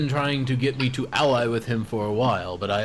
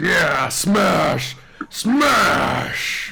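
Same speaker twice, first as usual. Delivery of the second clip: riled-up, eager, worked-up cry, high and loud; 5 semitones higher, 5 dB louder than usual. Voicing a creature's head that gets worked up about smashing: worked up. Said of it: "gets worked up".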